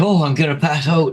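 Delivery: mock weepy, high, tearful crying delivery. Retelling how a caught thief sat crying for her mommy, imitating someone crying. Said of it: "she's sitting there crying for her mommy".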